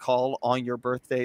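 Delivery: ordinary talk, nothing marked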